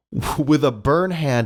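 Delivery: plain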